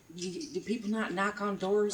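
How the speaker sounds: slow, very quiet half-whisper. Playing a character who half-whispers in someone's ear: half-whispering. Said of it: "whispers in your ear and goes".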